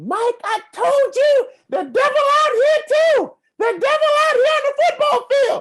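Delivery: shrill, loud, high-pitched soprano holler. Football player retelling a penalty and the shout from the sideline, imitating Gifford Ramsey's soprano yell. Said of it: "yelling from the sideline with his high soprano voice".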